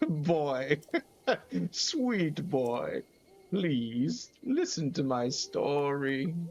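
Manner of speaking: put-on very slow, old-sounding voice. After giving up on a womanly voice, voicing the fairy's lines in an old Great Fairy Kotera voice. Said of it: "I don't know why she sounds old".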